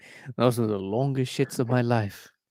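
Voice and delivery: fake British accent, done for show. Mid-conversation, telling an anecdote: British accent. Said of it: "That's pretty good British accent".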